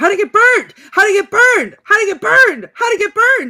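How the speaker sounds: repeated screaming, very high, shrill and very loud. Recounting a moment in a film where a man screams about a doll, imitating someone screaming. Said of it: "he was screaming".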